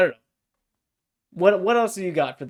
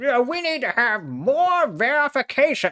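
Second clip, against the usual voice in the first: high, put-on crotchety old man voice. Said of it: "Just an old crotchety man".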